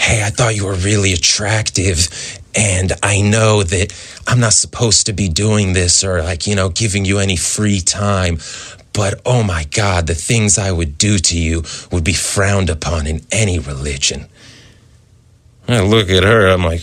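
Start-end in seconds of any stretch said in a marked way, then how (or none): 0.0-14.3 put-on whispering. Retelling what she said close in the ear: imitating someone whispering. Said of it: "whispering in my ear".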